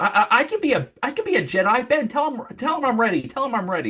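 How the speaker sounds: play-acted, very high, worked-up angry yelling. Retelling a film scene where a character yells at a ghost: imitating Luke Skywalker yelling. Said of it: "He starts yelling at a Force ghost".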